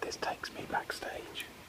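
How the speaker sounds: slow, hushed whisper. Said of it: "hence why I'm whispering".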